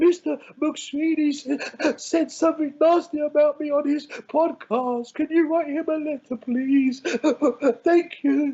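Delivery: put-on high, whiny blubbering like a little child. Imagining a man calling his attorney, the speaker mock cries like a baby. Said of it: "crying like a little baby".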